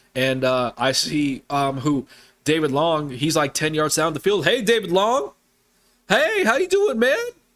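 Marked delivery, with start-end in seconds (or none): 4.4-7.1 mock, very high, rising shout. Spotting David Long open ten yards downfield, calling to him: calling out, raised voice. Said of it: "I have to raise my voice".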